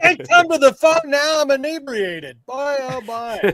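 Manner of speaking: put-on announcer voice. Pitching a voicemail greeting to give away, done in a Harry Caray voice. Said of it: "a Harry Carey voice".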